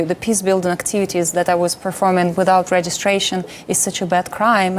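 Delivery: ordinary delivery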